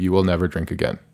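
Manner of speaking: normal talking voice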